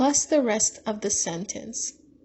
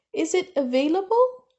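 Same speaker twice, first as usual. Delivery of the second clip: pitch lifts at the end of available; 7 semitones higher, 3 dB louder than usual. Teaching question intonation, rising at the end on available. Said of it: "you're supposed to raise your voice at the end. Okay? Like".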